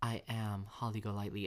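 ordinary talk

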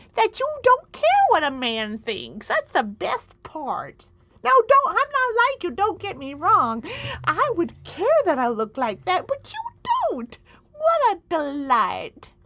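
put-on high, loud old granny voice. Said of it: "I'm already wearing a shawl".

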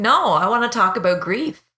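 normal talking voice

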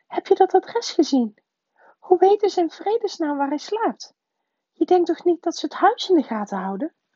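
very high, quavering, trembling voice. An aunt asks her husband questions, with a trembling voice. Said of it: "zei tante Petunia met een trillende stem".

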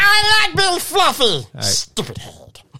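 very high, loud cartoon alien voice, swinging wildly. Doing a cartoon character voice, Stitch voice. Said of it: "Don't kill Stitch for me".

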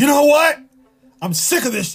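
mock yelling. Retelling what another person yelled out: imitating someone yelling. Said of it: "he yelled out".

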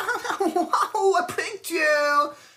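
mock laughing through words, very high and slow. Retelling a girl pulled from under a chair after a prank, imitating her laughing. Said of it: "she starts like laughing".

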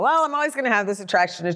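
casual, dismissive throwaway tone. Retelling what someone said about his urges: imitating a flippant remark. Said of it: "He sort of flippantly just said".

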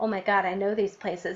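ordinary delivery

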